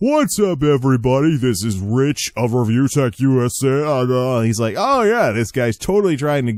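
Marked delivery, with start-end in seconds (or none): 0.0-4.4 slow radio announcer voice, "A" drawn out. Showing how a YouTuber got made fun of for his talking, as Rich of Review Tech USA, radio voice. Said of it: "sounding like he's on the radio".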